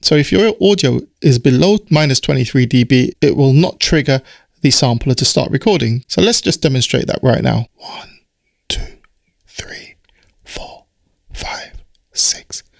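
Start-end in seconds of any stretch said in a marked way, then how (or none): 7.7-12.6 very soft, quiet whisper. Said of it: "I was whispering".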